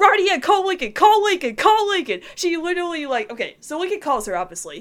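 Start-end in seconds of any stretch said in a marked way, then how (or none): 0.0-2.2 high, loud screaming, same words over and over. Retelling own reaction while watching an episode: imitating own past screaming. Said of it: "I was screaming".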